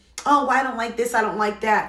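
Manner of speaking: mocking put-on feminine voice, complaining tone. Mimicking women who complain about tone: mocking imitation of women. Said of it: "why do we always gotta do that as women".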